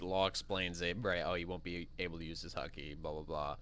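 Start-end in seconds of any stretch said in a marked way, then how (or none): none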